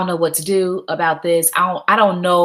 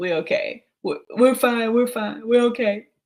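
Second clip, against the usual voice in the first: acted, strained voice forced through held-back tears; 4 semitones higher, 3 dB quieter than usual. Retelling telling a woman they were fine, acting out holding back tears. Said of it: "Holding back tears and shit".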